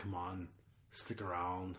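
very hushed, low action-hero voice, barely above a breath. Doing a Predator line for Rob: Arnold Schwarzenegger Predator line impression. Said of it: "That still sounds like Arnold".

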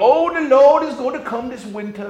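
high voice with a speech impediment. Retelling how kids mocked a church man: imitating Perry Macklin's speech impediment. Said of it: "Perry Macklin talked like this".

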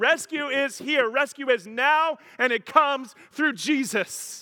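exultant, joyful cry, very high and very loud. Speaker repeats a line to the folks listening, joyful and excited. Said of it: "let's muster up some joy and excitement".

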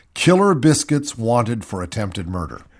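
ordinary delivery

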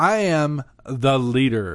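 grandiose, grand, every word heavily weighted. Retelling how a character declared herself leader: imitating an emphatic capital-letters declaration. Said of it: "you can hear the capital letters".

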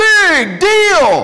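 high, loud booming shout, belted out.

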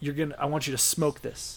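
put-on South African accent. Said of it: "has this awesome South African accent".

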